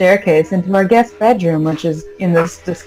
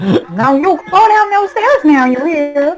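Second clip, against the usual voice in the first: bossy voice, pitched way up high; 9 semitones higher than usual. Playing a mother character in a scene, Stefan's mom voice. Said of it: "I'm doing the best Stefan mom voice I can do".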